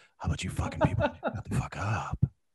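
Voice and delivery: crude, breathy, hushed whisper. Retelling what a coworker said in a meeting: imitating Jeff Woods's voice. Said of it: "Jeff's like".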